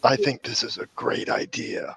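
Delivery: hushed, whispered voice. In a roleplay scene, Con leans over and speaks: whispering.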